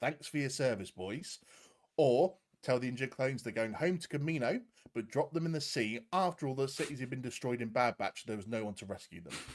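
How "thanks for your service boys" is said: ordinary talk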